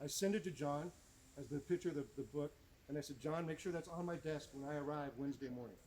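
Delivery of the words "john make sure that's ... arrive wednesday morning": ordinary delivery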